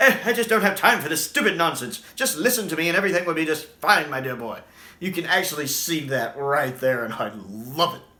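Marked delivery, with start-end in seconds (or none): 0.0-4.6 loud, high-pitched, impatient voice. Describing how the Fifth Doctor echoes an earlier Doctor: First Doctor impression. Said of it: "You can almost see the First Doctor in him".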